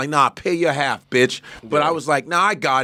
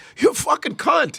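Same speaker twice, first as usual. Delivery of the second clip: very high voice, giggling and laughing through words; 12 semitones higher than usual. Retelling calling someone an insult during an argument: retelling an insult while laughing. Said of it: "I was laughing about it".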